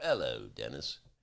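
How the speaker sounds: put-on speaking with British accent. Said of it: "I will now do, uh, my [name]".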